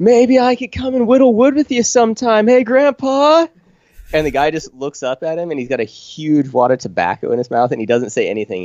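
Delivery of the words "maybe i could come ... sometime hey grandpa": put-on very high, loud scream. Retelling a movie scene where a character yells at a grandpa: imitating a scream. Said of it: "he just screams at him".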